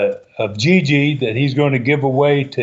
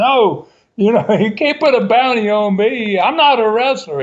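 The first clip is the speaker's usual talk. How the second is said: mock screaming, pitched much higher; 8 semitones higher than usual. Retelling how a man reacted to the studio crowd, imitating someone screaming. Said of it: "he's just screaming".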